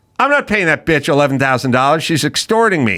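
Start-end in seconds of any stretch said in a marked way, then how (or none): none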